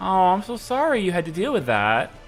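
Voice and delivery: put-on, mock insincere, fake-sorry tone. Imitating an elementary school teacher apologizing to a second grader, mock insincere. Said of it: "You know the tone. It's not sincere".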